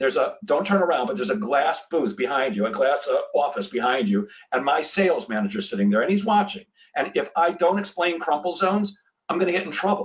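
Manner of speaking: ordinary delivery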